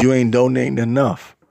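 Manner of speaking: plain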